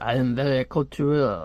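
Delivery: very slow, drawn-out put-on French accent. Imitating a character with a Russian name who speaks French-accented, French accent. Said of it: "he speaks, uh, like, with a French accent".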